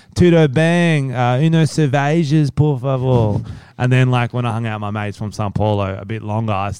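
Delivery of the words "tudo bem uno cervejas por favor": put-on very slow Portuguese in an Australian accent. Recalling early attempts at learning Portuguese: Australian-accented Portuguese. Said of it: "I started off like doing it like Australian Portuguese".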